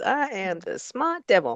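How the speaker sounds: put-on devil voice with laughter. Retelling a movie scene where the devil gloats, imitating Ernest Borgnine laughing. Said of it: "so Ernie's just laughing away. He's like".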